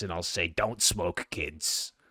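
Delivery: put-on rasping, aged voice. Showing how their voice will sound by thirty-seven: raspy old voice. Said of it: "I'll sound like this".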